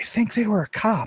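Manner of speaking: quiet, confidential whisper. Playing a character leaning in to tell another character: whisper. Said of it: "she's gonna kinda lean in and whisper".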